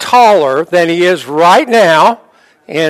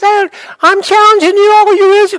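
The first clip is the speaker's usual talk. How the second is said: giant voice pushed way up, very high-pitched; 14 semitones higher than usual. Voicing Goliath's challenge to the audience, in a high-pitched Goliath voice. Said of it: "this Goliath had this real high-pitched voice".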